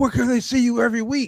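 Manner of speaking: mock hyped, high-pitched shouting. Retelling what friends yelled from outside the match: imitating someone screaming. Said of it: "they were screaming".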